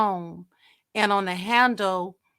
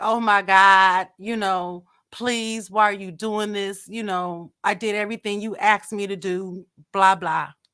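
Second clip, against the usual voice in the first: acted tearful, crying, pleading delivery. Recounting being ordered out of a car, retelling her tearful pleading. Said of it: "I'm crying, pleading".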